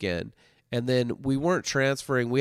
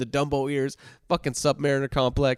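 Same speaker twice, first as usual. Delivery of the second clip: plain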